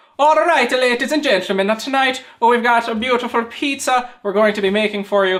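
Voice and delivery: put-on accent slipping into Irish. Welcoming viewers to a pizza-making episode: put-on accent slipping into Irish. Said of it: "I switched into Irish".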